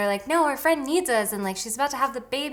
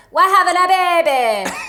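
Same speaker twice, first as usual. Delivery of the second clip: very loud, high-pitched, belted out; 8 semitones higher, 12 dB louder than usual. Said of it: "[name] in Spice World. She says".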